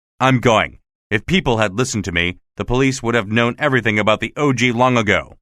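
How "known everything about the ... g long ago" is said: ordinary delivery, nothing marked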